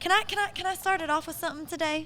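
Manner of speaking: genuine country accent. Asking the co-hosts to start the history segment: real country voice. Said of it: "you said that in your real country voice".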